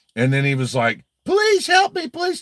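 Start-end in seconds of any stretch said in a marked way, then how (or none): 1.3-2.4 very high, put-on tearful, crying begging. Retelling how he begged after being hit, imitating Chris Ruff crying and begging. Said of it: "he cried and he screamed like a girl".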